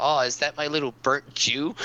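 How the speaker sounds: ordinary delivery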